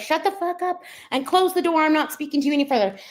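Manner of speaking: high-pitched put-on shouting. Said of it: "As she's yelling".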